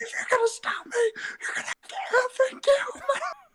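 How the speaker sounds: mock, very high-pitched defiant squeal. Retelling a TikTok using the clip where Ruth screams: imitating Ruth screaming. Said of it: "she screams it".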